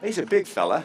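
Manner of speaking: best-attempt put-on Australian accent. Mid-conversation, trying a line in a put-on Australian accent. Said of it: "I'm going to do my best Australian accent".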